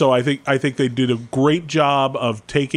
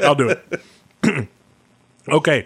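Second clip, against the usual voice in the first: speaking with mouth full, much slower. Told he has food in his mouth, agreeing to go first while talking with mouth full. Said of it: "You have food in your mouth".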